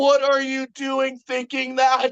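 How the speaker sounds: mock freaked-out outburst, high and frantic. Retelling how someone reacted, imitating someone freaking out. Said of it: "he's just freaking out".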